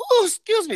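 very high put-on woman's voice, embarrassed. Showing what to say on a sound drop, like a woman queefing. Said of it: "like a woman queefing".

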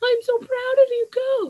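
very high, proud, happy, encouraging mom voice. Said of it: "just that happy".

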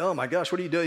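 ordinary delivery

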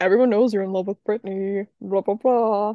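put-on dorky voice. Recapping a TV storyline, the speaker quotes Finn in a dorky Finn voice. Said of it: "giving him that little like dorky voice".

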